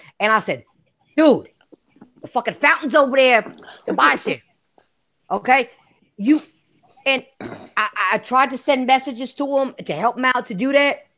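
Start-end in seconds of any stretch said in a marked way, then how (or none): 1.2-4.4 mild, toned-down hollering yell. Retelling yelling at the screen during a game: imitating own yelling. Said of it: "I'm yelling at the screen".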